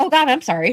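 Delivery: mock limp, half-hearted, weak, immediate delivery. Mocking a character's weak immediate apology: imitating Dale's weak apology. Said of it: "He's like".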